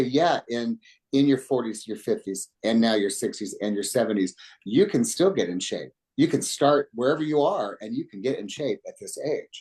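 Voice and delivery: normal talking voice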